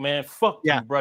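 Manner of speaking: imitated hostile, harsh, insulting tone. Retelling how Johnny Storm said the joke: imitating a hostile insulting tone. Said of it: "he did it in the tone like".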